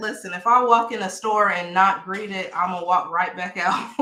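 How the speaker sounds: ordinary talk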